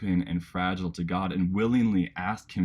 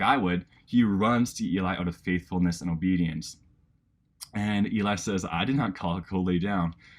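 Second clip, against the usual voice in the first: ordinary delivery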